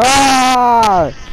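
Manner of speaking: high, loud, startled scream.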